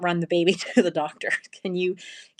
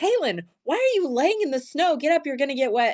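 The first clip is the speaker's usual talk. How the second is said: sharp, high-pitched scolding; 9 semitones higher than usual. Retelling calling out to someone lying in the snow, retelling a yell. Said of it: "I yelled at Kaylin".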